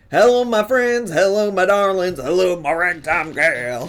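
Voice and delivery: old-timey vintage cartoon character voice. Greeting chat after being told of sounding like a cartoon: old-timey cartoon character voice. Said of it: "You sound like an old-timey cartoon character".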